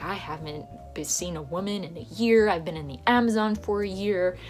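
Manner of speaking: ordinary talk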